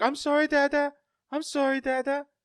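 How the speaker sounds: put-on tiny, very high little-kid voice. Retelling a comedian's story, quoting his daughter: imitating a small child apologizing. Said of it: "he's like".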